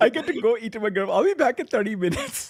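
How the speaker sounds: put-on Indian accent. Imitating a co-host leaving the show: imitating a co-host with Indian accent. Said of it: "your impersonation makes me sound like an Indian".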